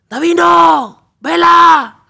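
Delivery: very loud, shrill, high shouting. Speaker retells calling to players twenty meters away, retelling a shout. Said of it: "Y empezó a gritar".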